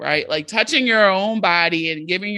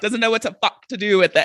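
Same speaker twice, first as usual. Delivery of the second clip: imitated British accent; 3 semitones higher than usual. Repeating how the other speaker said a line, imitating her british accent. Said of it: "I liked how you said "fuck."".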